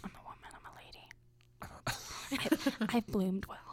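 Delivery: slow, breathy, spooky, sensual whisper. Joking with the others about wearing leather as a cat: whispering.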